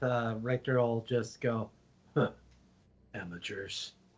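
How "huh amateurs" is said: quiet muttering under the breath. Speaking in character, commenting on two travelers: muttered under his breath. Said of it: "kind of under his breath".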